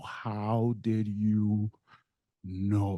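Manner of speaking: very slow, tearful, crying, drawn-out words. Retelling asking how she knew a story only he knew, re-enacting crying. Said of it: "I start crying and I go".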